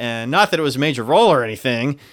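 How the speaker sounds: loud, dry sarcastic delivery. Describing a replacement actor's role to another speaker: sarcastic. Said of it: "I sense a little sarcasm there".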